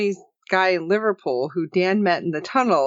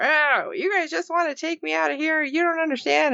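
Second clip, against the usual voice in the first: worked-up, angry, mad, pitched-up outburst; 8 semitones higher than usual. Retelling an episode's scene, imitating an angry character: imitating an angry character. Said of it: "And he's all mad".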